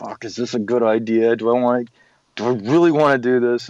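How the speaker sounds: imitated speech through gritted, clenched teeth. Retelling own reaction to a suggestion to read the script together: talking through gritted teeth. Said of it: "I'm gritting my teeth like".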